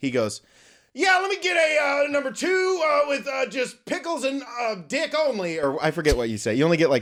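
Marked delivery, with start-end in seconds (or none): 0.9-5.6 shrill, very high-pitched, way-up-high yelling. Retelling a friend ordering at a drive-through speaker box: imitating Colton yelling. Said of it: "get ready because this is gonna be loud".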